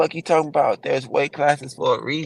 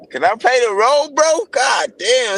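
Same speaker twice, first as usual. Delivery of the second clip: excited, high, loud, worked-up outburst; 13 semitones higher, 6 dB louder than usual. A friend teased him on the call for deepening his voice; excited, high-pitched voice. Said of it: "Now my shit go high as shit".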